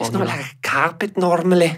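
poor fake Scouse Liverpool accent. Repeating what he said in a Scouse accent, bad Scouse accent. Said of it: "It's in the Scottish".

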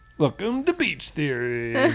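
animated, swooping show-host voice. Opening the episode with a put-on show-opening line: MatPat Game Theory voice. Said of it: "do my game theory voice".

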